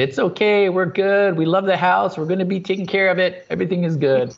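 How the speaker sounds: high, calm, called-out voice. Retelling calling out to anyone who could hear after the power failed: retelling a yell. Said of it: "I remember yelling".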